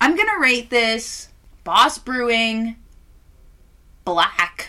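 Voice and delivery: voice breaking and cracking mid-line. Starting to rate a product, the speaker's voice gives way: voice cracking. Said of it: "Oh, my voice cracked".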